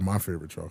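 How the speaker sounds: put-on under-breath muttering. Teasing another speaker about what he said, retelling an under-breath mutter. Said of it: "Under his breath, he said".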